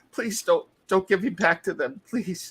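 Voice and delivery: high, tearful, pleading voice, crying. A freed captive throws his arms around his rescuer, crying, pleading. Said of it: "he's crying and uh".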